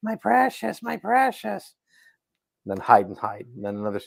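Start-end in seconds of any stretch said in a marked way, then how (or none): 0.0-1.7 drawn-out delivery in a high, rough voice. Mocking a game's endless sound bites of skulking around corners: Gollum voice. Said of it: "him skulking around a corner going".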